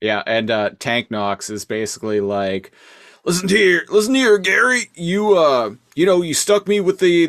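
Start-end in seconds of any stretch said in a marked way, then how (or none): 3.3-7.3 loud, high-pitched, hollering trucker voice. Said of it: "Trucker Rhinox impressions".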